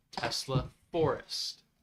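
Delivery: very slow, carefully spaced words. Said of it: "One more time".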